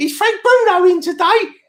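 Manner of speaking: put-on tiny, very high little-boy child voice. Remembering yourself as a kid asking the landlord for someone in the pub, in a little Oliver voice. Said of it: "I used to sound like little Oliver".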